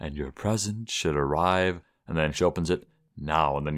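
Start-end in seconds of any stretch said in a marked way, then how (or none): 0.0-1.8 put-on whisper, lower and quieter. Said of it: "You hear Santa whispering".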